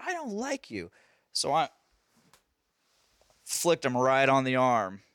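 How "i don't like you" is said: put-on high, hushed, tearful child's crying whimper. Retelling a child's reaction after being told to calm down: imitating a crying child. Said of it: "he's crying".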